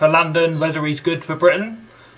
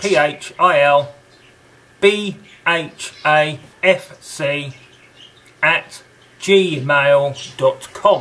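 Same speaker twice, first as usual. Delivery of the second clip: very slow, deliberate, letter-by-letter spelling. Giving an email address for viewers to write to: spelling out slowly. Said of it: "I think I said it slow enough".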